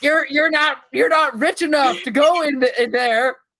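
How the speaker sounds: very high squeaky stammering yell. Pitching a game idea where a celebrity narrator blocks players: Charlie Day impression. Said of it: "my Charlie Day impression is so good".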